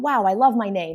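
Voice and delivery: ordinary talk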